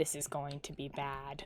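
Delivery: barely audible, very quiet, hushed half-whisper. Retelling what a coworker said to them, half-whispering. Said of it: "she whispers".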